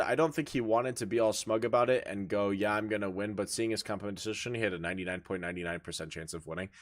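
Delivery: plain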